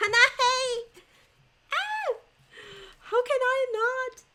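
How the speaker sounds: very high, loud, excited, delighted screaming.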